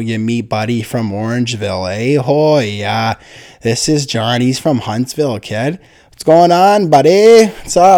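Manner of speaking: put-on stock small-town Canadian accent. Imitating people from school who sounded like that, stereotypical Canadian accent. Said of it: "they actually sounded like that stereotypical Canadian".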